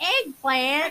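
loud, mocking Southern American accent. Retelling baking show contestants mocking the word eggplant: mock Southern accent. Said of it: "doing it in a Southern accent".

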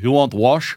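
put-on Eastern European accent. Retelling a haircut visit, quoting the woman there in an Eastern European accent. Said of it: "Eastern European accented woman".

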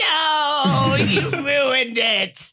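very high shriek, the word "no" stretched out. Retelling a film scene of Gollum yelling at a cook: Gollum screaming. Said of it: "Gollum's just, like, screaming".

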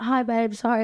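put-on British accent. Retelling answering someone while walking out; put-on British accent. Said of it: "I put on my British accent".

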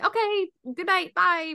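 very high, drawn-out, falsely friendly fake cheer.

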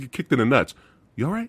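put-on friendly tone. Quoting a man called the nicest dude, checking on a fighter: imitating a very friendly tone. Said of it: "he's like the nicest dude".

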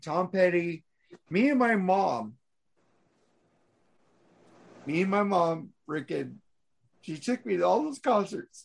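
crying while talking. Remembering going to concerts with a late parent, crying while talking. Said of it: "I'm fucking crying".

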